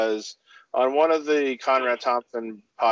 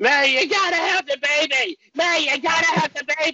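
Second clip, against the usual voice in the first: mock, repeated, very high-pitched screeching cry. Retelling a wrestling show where someone screams over and over: imitating someone screeching.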